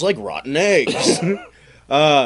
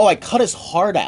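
normal talking voice

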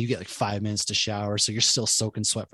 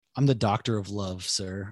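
slow, put-on dead serious deadpan, no joking. Retelling a kid answering a drill instructor: imitating a straight-faced answer. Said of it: "I don't know how he kept a straight face".

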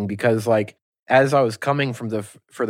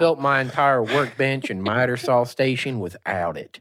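down-home rural country accent slipping out. Joking with the other speaker about not reading instructions, in a country accent. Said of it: "Why did I talk with my country accent there?".

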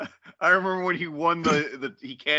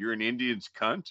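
deadpan, lower and quieter; 4 semitones lower, 6 dB quieter than usual. Retelling a reply to a friend while messing with him at league, retelling a deadpan reply. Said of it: "I look at him deadpan".

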